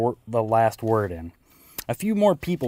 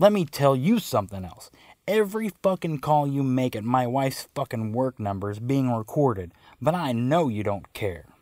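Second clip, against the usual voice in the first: ordinary talk, nothing marked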